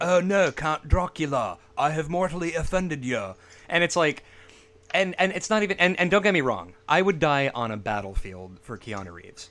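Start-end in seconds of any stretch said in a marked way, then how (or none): 0.0-3.3 stiff, clumsy, forced put-on English accent. Speaker mocks a movie scene, doing Keanu Reeves trying English accent. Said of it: "trying to do an English accent in movies where he's like".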